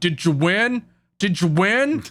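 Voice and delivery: eager, vicarious, invested dad voice. Recapping a scene where Renji shows up, Renji sounding like a vicarious dad. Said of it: "he sounds like a dad trying to vicariously live through his son".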